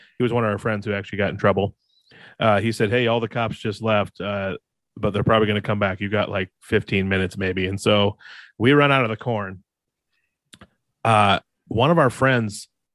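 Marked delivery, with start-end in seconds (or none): none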